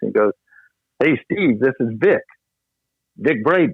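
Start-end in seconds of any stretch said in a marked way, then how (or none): 1.0-3.7 jovial, hearty, cheerful delivery. Retelling a phone call you left the court to take, imitating Vic Braden's jovial voice. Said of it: "here's his jovial voice".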